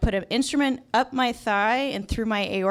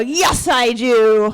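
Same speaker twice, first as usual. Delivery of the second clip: put-on drunk slurring, much louder; 2 semitones higher, 9 dB louder than usual. Retelling answering a hospital doctor's question, imitating own drunk voice. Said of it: "And I sound drunk and I feel drunk".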